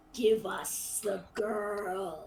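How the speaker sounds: deep, guttural, beastly growl from the throat. Voicing a talking animal to the players in a tabletop game: deep guttural bestial voice. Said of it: "in a deep, guttural, bestial voice".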